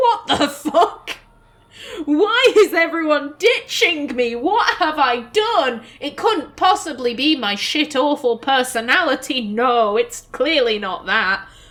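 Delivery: acted, fed-up, exasperated, indignant rant. Voicing the player character's reaction after being sent away: imitating an exasperated rant. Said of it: "She's like".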